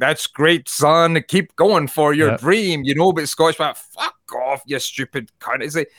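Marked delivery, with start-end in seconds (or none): 0.0-2.8 encouraging voice in a put-on American accent. Speaker contrasts how Americans and Scots react, doing a mock American accent. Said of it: "how Americans would be like".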